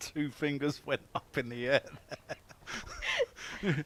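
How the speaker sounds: talking through laughter with swooping delivery. A commentator calling a six and explaining the umpire's signal, laughing while talking. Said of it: "Sorry, I'm laughing".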